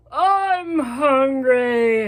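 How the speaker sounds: very loud, bellowing lion roar voice. Reading a story aloud, voicing a lion coming down the path: roaring lion voice. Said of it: "roared the lion".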